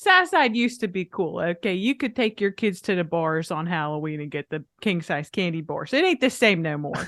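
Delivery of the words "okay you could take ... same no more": low dad character voice. Speaker imitating their dad talking about the South Side, impression of my dad. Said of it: "I'm gonna do an impression of like my dad".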